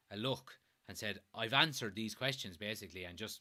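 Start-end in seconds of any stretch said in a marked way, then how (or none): none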